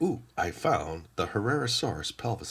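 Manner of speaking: usual speaking voice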